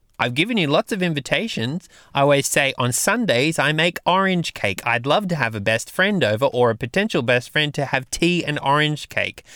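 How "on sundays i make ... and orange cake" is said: plain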